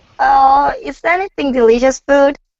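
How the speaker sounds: put-on woman's voice. Asked to show a woman's voice when hungry: imitating a woman's voice. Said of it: "your voice as a woman".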